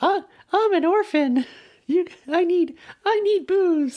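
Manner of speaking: very high, slow, small little robot voice. Acting out the little orphan robot begging for booze: Tinny Tim voice. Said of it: "Tiny Tim type robot who does the whole".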